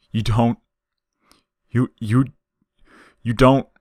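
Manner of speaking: voice cracking. Reading a story aloud, a character protests as feelings break through: voice cracking. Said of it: "His voice cracked like ice".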